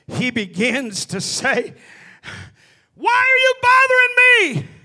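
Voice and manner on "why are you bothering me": very high shrieking demonic voice. A preacher acts out the devil speaking when resisted: shrieking devil voice. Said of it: "With a shrieking voice".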